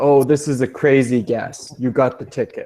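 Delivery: ordinary delivery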